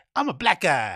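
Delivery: over-the-top, exaggerated fake American accent. Mocking the voice americans have, in an exaggerated put-on american accent. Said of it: "You know that fucking voice that you guys have, that American".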